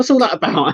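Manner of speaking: high-pitched, mock baffled tone. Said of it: "He goes".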